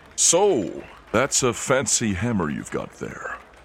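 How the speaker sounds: animated, swooping voice calling out. A voice calls out from across the room: booming voice. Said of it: "Kind of a booming voice".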